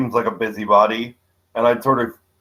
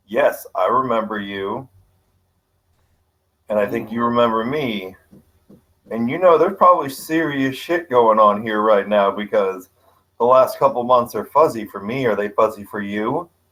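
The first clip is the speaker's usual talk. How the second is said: spoken low, confiding aside in low tones. A character walking toward the door speaks to John, in low tones. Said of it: "I'm gonna say in low tones".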